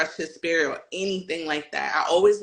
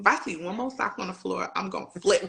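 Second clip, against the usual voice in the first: irritated, annoyed tone. Retelling what she told her partner about socks on the floor: imitating her own past complaint. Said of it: "I was like".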